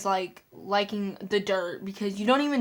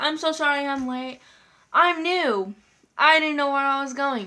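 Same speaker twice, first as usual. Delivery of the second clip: acted-out high, sarcastic, insincere tone; 5 semitones higher, 4 dB louder than usual. Retelling what a new classmate said on walking in late: imitating a sarcastic apology. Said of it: "He was being sarcastic".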